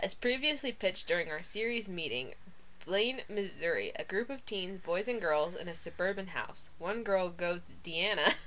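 ordinary talk, nothing marked

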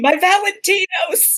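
very high, shrill screaming cry. Narrator in a tabletop game voicing Florence's reaction: Florence screaming. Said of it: "Florence is screaming".

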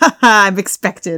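loud, dismissive, laughing through the words. A player's character brushes off guards, laughing dismissively. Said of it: "I laugh and sort of brush them off".

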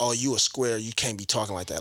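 ordinary talk

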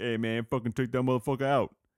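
coach voice, barking. Retelling what the coach told the players: imitating the coach. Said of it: "the coach was like".

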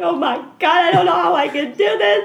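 very high, loud bawling wail, sobbing. Speaker recalls an email that changed the show they made, re-enacting own bawling. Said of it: "And I'm just bawling".

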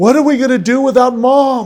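very high, loud, tearful, sobbing wailing scream. Retelling how his son kept screaming to him, imitating a crying scream. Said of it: "Kept screaming that".

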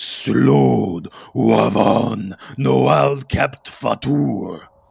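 deep, rough bellowing voice, very loud. Narrating to the players the voice behind them again, deep bellowing voice. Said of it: "in a deep bellowing voice".

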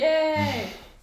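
very loud, high, thrilled cheer. Cheering after finishing off a creature in the game: loud excited cheer. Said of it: "Sorry, I keep saying that. I'm so excited".

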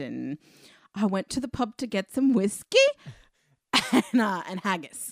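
loud put-on British accent. Speaker recalling a movie scene, quoting Nicolas Cage's fake British accent. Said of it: "this fake British accent".

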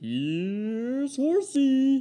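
very high, loud, drawn-out taunting monster voice.

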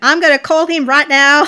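put-on very loud, high, thick New York accent. Imitating a line from a retold phone call: attempted new york accent. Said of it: "the strong New York accent".

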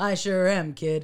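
ordinary delivery

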